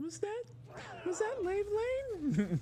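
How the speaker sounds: tiny, piping, very high little voice. Retelling a friend asking over the phone: imitating a little tiny voice. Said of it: "I hear a little tiny voice on the phone".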